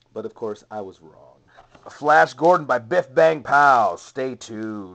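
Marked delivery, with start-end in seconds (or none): 1.9-5.0 loud radio DJ announcer voice. Reviewing toy figures and announcing the product name: radio dj voice. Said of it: "I sound like a radio D J".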